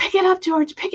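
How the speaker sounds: mock, very high-pitched, urgent tone. Retelling watching a video, imitating own yelling at TV. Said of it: "yelling at the T V".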